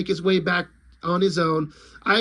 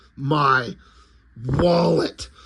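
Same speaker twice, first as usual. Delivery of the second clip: put-on angry voice, lower pitch; 4 semitones lower than usual. Retelling a comic where Popo sees aliens keep his wallet: imitating angry Popo. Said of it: "angry face, he's like".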